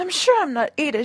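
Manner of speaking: ordinary delivery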